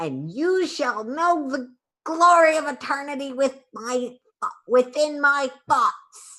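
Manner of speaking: harsh, grating voice pitched way up. A telepathic voice speaks into every player's mind; grating voice. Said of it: "a grating voice that echoes through your mind".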